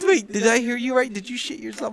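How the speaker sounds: talking through laughter. Retelling how mom came in and asked: imitating mom laughing while talking. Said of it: "She comes in laughing".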